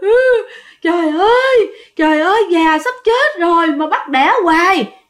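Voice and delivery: crying, wailing high through sobs.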